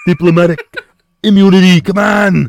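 loud, high-pitched South African accent. Attempting the line in a South African accent: Arnold Schwarzenegger impression. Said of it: "I go into Arnold Schwarzenegger".

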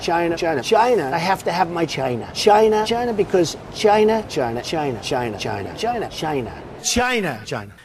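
high, repetitive refrain. Repeating a word over and over as Trump says it: Trump saying China. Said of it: "That's how Trump says it".

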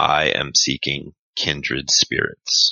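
very slow, completely toneless monotone voice. Telling a story, quoting a guy in a food court in a very monotone voice. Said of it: "says in a very monotone voice".

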